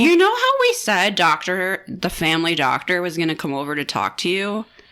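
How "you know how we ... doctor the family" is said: plain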